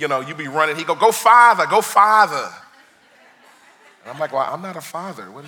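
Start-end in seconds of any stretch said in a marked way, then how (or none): 1.0-2.5 put-on Northeastern regional accent. Retelling what a man would call out while you were running, in thick Northeastern accent. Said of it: "he had a real thick Northeastern accent".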